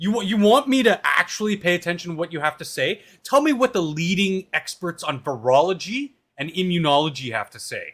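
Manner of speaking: heated, fired up, high-pitched, worked-up rant. Arguing a point back and forth in conversation, getting worked up. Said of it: "I'm already getting worked up".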